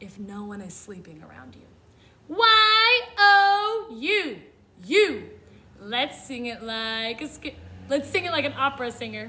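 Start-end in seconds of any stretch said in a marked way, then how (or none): 2.3-5.3 very slow, drawn-out shouted spelling with long O. Showing learners how to shout-spell a word: shouting. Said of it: "Let's shout spell it".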